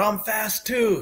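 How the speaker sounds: mock yelling. Recalling how he yelled at the crowd after a good game, retelling a yell. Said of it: "yelling at the crowd".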